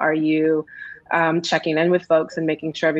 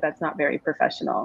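soft, hushed, leaned-in whisper; 5 dB quieter than usual. Retelling a remark from a superior at work: imitating a whisper. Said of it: "leaned in and whispered to me".

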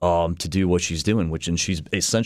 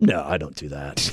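put-on deadpan, lower and slower; 2 semitones lower than usual. Retelling a character's line to the camera in a kitchen scene, retelling a deadpan reply. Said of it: "she just kind of deadpans".

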